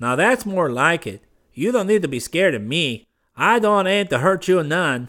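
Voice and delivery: high-pitched mocking sneer. A man tells a defiant, frightened woman not to fear him, sneering. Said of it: "a definite sneer in both the voice".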